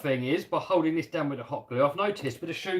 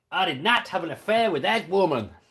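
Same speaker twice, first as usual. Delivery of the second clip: put-on American accent from an English speaker; 2 semitones higher, 3 dB louder than usual. Reading a chat request to do an american accent: american accent. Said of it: "Kev, do an American accent".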